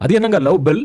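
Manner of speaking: ordinary talk, nothing marked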